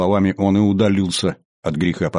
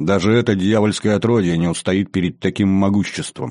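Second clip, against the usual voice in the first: ordinary delivery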